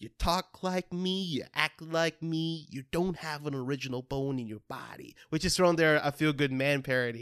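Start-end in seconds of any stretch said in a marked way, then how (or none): 0.0-5.1 put-on gravelly actor voice, quieter. Showing the warm-up line used for an impression: Jack Nicholson impression. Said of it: "mine for Jack Nicholson is always".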